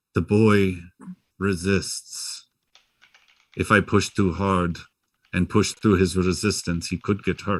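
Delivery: even, untroubled, calm, unaffected voice. A figure remembered from the inn answers back in a calm, unaffected voice. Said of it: "calm, unaffected voice".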